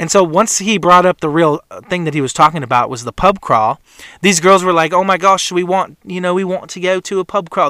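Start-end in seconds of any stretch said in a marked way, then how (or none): 4.9-7.7 put-on British accent, much slower. Retelling what some girls said about a pub crawl, in a British accent. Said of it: "That's a little more British accent of mine".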